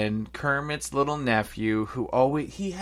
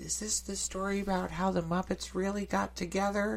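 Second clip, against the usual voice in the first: high, little sweet voice; 7 semitones higher, 10 dB quieter than usual. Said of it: "his little voice is so, like, cute and sweet".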